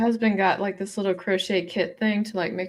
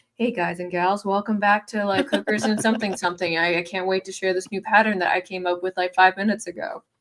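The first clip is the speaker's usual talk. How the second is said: normal talking voice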